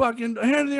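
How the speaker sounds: very high-pitched screaming. Retelling how a cop with gun drawn shouted: imitating a cop screaming. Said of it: "And screaming".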